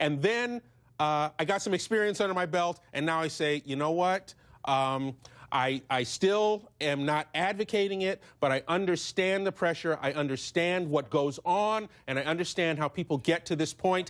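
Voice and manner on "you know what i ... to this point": ordinary talk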